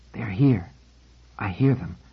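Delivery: taut, tense, low, hushed half-whisper. A narrator reads a character's line during an uneasy silence, in a tense, low half-whisper. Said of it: "said in a tense, low whisper".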